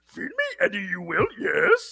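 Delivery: small alien voice with pitch swooping all over. Recounting voices the other speaker requested, doing a Venom line in Yoda voice. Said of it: "Then you asked me to do Yoda".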